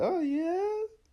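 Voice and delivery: abrupt, sudden leap to a very high pitch. Showing how the voice jumps when agreeing: sudden high pitch. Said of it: "instead of saying, "Yeah, nah," or something like that, I'll be like".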